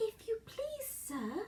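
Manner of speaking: slow, timid, soft, high, drawn-out pleading. Desperate for help, Alice speaks to the rabbit as it comes near: slow, timid voice. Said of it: "she began in a slow, timid voice".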